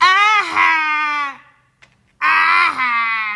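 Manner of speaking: put-on smug gloating. Retelling what a man said behind him while he cried, imitating a gloating man. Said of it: "This man is gloating".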